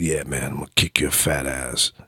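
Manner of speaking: disguised, threatening, taunting half-whisper. Retelling sneaking up behind a man on the dais, imitating a disguised half-whisper. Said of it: "I was whispering in his ear".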